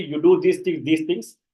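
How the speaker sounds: ordinary delivery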